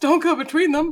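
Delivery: put-on, high, loud yell in character. Voicing a character warning the pilot during a vehicle escape: yelling in character. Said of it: "Modi yells".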